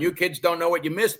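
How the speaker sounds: put-on bitter old man voice. Joking about sounding nostalgic: put-on bitter old guy voice. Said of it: "the bitter old guy sitting on the porch going".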